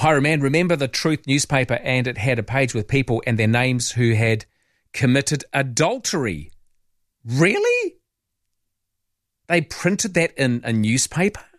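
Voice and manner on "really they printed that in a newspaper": high, swooping, scandalised shocked disbelief. Reacting to what someone just recalled, sounding shocked. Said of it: "I don't know why I sound so shocked".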